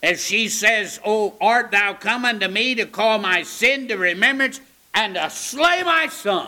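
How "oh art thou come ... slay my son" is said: resentful, bitter, blaming, accusing tone. Speaker voices a mother blaming Elijah over her son, acting out bitter words. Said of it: "I can almost hear the bitterness in her voice".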